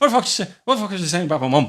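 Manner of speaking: put-on heavy, thick Irish accent, loud and high. Retelling a young kid confronting him outside a shop: imitating a thick Irish accent. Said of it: "fucking thick Irish accent".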